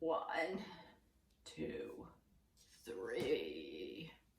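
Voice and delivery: very low, soft, ill-sounding sick voice. Counting to three with the audience, using a put-on sick voice. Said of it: "Let's count to three in our sick voice".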